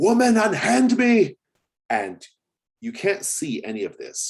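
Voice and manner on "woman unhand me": very shrill, very loud outcry. Voicing a man pulling free from his wife: crying out in character. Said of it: "You just hear him crying out".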